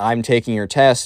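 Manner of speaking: acted clear, loud voice. Retelling how a teacher caught a student during a test: retelling a clearer, louder voice. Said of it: "more clearly and more out loud".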